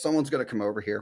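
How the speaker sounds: mock frightened voice. Retelling sitting alone at a restaurant table, imitating being scared. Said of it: "like, scared".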